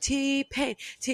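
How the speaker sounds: put-on screaming. Retelling asking the DJ at a wedding for songs: imitating herself screaming requests.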